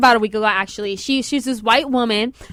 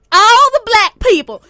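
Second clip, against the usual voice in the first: put-on country accent, higher and louder; 11 semitones higher, 8 dB louder than usual. Retelling what a principal said to people leaving a graduation: imitating a country accent. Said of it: "that's exactly how she said it".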